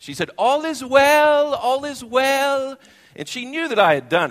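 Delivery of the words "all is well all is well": put-on very slow, very high, sweet South African accent. Retelling what a team leader told armed security guards: Karin's sweet South African accent. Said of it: "so sweet in her South African accent".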